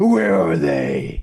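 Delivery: very loud, very low, booming masked-hero voice. Explaining how he talks once he puts on the cape, speaker does a Batman voice. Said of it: "I start talking like this".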